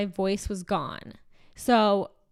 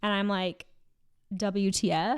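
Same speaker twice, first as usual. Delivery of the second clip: ordinary talk, nothing marked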